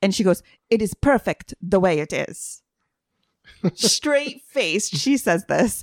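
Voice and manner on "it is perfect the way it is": put-on mock French accent. Retelling what the woman taking their order said, in a put-on french accent. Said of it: "in the most perfect French accent".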